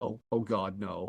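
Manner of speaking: play-acted dread, hushed and very drawn out. Retelling their reaction to an actor's transatlantic accent, imitating worried dread. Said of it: "I got really, really worried".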